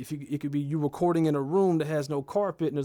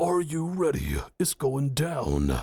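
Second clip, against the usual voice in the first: slow, deep, bass-heavy close-mic voice. Demonstrating how getting close to the microphone adds bass, in a bassy close-mic voice. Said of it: "You get that type of voice".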